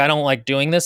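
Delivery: plain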